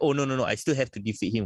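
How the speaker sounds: plain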